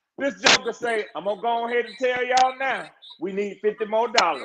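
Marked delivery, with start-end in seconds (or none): 1.2-4.5 church deacon voice, announcing style. Retelling a funny collection moment at church, imitating a deacon. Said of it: "funniest things I ever heard a deacon say".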